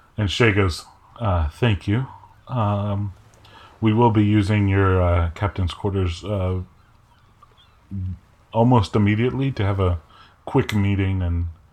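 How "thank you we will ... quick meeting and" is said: ordinary talk, nothing marked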